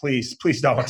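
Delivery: mock pleading tone. Retelling how a buddy reacted when told he'd do something, retelling his pleading. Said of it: "And he's like".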